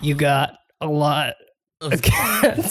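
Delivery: swooping, every word forced out one by one. Retelling a funny moment, speaker imitates Robert Pattinson punching words out. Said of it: "every single word is being punched out of him".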